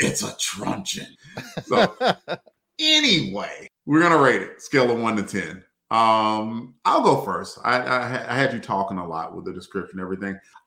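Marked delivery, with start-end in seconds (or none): 0.0-1.1 hushed, breathy whispered voice. Imagining how Moonlight would say it, the speaker does a Batman-esque voice. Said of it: "a kind of like a Batman-esque voice".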